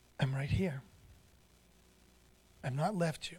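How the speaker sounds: gentle, soft, hushed, near-silent voice. Speaker acts out what the gentle one says to him: soft, quiet voice. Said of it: "He just says in a soft, silent voice".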